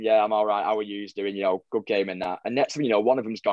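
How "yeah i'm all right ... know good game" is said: ordinary talk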